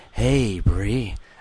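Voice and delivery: cool bartender voice. Showing how the speaker would sound as Bree's bartender: cool bartender voice. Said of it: "This is my voice if I was your bartender".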